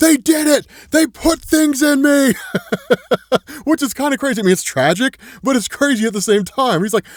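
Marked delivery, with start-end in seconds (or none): 0.0-2.3 put-on piercing scream, pitched very high and shrill. Retelling a scene, the speaker imitates a traumatized man screaming. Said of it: "just starts screaming".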